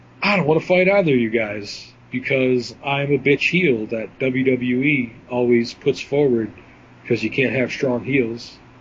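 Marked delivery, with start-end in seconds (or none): none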